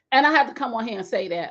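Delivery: ordinary delivery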